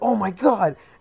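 high, frantic, freaked-out, panicked outburst. Retelling finding a brother bleeding after a kick: retelling own freaked-out exclamation. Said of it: "I'm freaking out".

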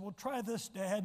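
normal talking voice

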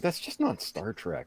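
laughing while talking. Recounting a friend describing a show's plot, retelling his own laughing reply. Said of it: "I'm laughing and going".

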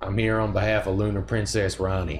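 put-on Texas accent. Voicing a character as if he were from Texas, as a friend suggested: Texas accent. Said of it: "imagine if he sounded like he was from Texas".

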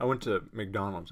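ordinary talk

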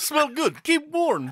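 put-on very high voice, broken English, Russian accent, articles dropped. Teasing a co-host for dropping articles, repeating the line in a Russian accent. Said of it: "it was like a Russian accent".

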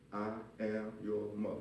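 stern, slow, firm, no-nonsense delivery. Retelling how his wife told the children who she was: imitating his wife's firm tone. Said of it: "She said it like that".

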